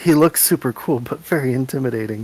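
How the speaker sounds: quiet, hushed whispered aside. A character whispers to a companion about an intimidating newcomer, whispering quietly. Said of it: "just kind of whisper quietly to Viscus".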